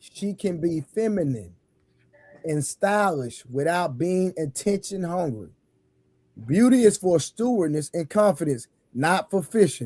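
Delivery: very slow, careful, deliberate reading. Reading a passage again after being asked to slow down: slowed-down reading. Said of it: "when you read it, Reverend, slow down".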